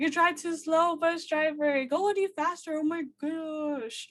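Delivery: put-on rowdy, high, childlike screaming, gosh drawn out. Retelling kids on a bus yelling at the driver: imitating kids screaming. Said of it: "they were screaming".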